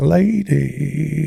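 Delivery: rough, creaky voice ground out with thick vocal fry. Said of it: "And he has fry".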